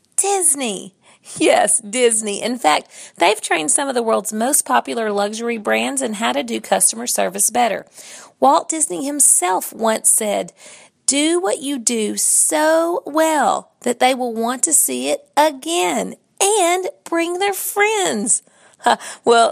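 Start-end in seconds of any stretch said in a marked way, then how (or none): 8.4-19.5 enthusiastic, excited, deliberate delivery. A speaker quoting a famous line while talking about customer service, excited. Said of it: "you hear the excitement in my voice".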